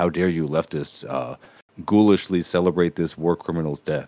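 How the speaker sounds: ordinary delivery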